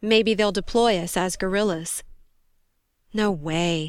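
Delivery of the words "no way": gentle, softly spoken. Narrator reading a woman answering the man seated opposite her: softly. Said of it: "said Joni softly".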